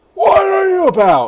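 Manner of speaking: very high, loud, disjointed shout in broken pieces.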